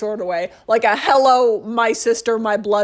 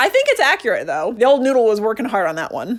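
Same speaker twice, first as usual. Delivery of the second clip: ordinary talk, nothing marked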